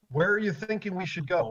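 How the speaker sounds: whispering. Speaking in character, asking the group where to go: whispering. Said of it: "He's whispering this, by the way".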